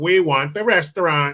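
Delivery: sniveling, whiny, small, ratty voice. Retelling a movie scene where the character demands the restaurant: imitating the movie's rat character. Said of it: "That's like how he talks".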